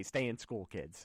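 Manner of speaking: ordinary talk, nothing marked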